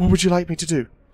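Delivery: high, frightened, terrified voice, pushing through. A game master voices a little tabaxi pushing through its fear, terrified. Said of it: "just terrified".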